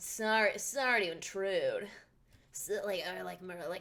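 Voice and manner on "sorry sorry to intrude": snide put-on character voice. Trying out a voice for the game character Lang: snide Lang voice. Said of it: "snide sounding".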